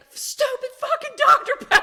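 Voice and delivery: piercing, shrill, full-volume enraged scream. Retelling a son's outburst after hitting a deer: imitating someone screaming in anger. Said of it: "he's just screaming. He's just so mad".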